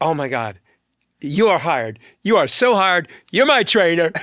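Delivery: put-on hysterical laughter while talking. Retelling how he reacted when hiring the speaker as trainer, imitating hysterical laughing while talking. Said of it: "he started hysterically laughing".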